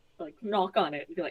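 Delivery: ordinary talk, nothing marked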